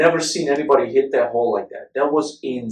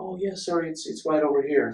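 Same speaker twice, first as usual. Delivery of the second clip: sudden put-on polite tone, higher, quieter; 3 semitones higher, 10 dB quieter than usual. Retelling how a man who yelled at them suddenly answered politely, imitating a sudden polite tone. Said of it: "How do you change your tone like that?".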